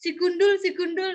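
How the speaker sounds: teasing, called-out delivery. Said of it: "mau manggil".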